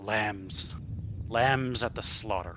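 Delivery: hushed whisper. The unsurprised leader speaks as the group comes to attack, whispering under his breath. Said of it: "he kind of just whispers".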